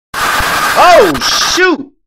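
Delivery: very loud, very high, shrill, raspy shriek. Streamer reacts while playing a game, screaming. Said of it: "sorry for screaming in your ears".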